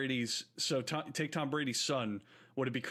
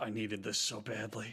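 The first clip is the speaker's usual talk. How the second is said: whispering under breath, lower; 4 semitones lower, 3 dB quieter than usual. Acting out a father at a family event: whispering under his breath. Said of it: "whisper under his breath".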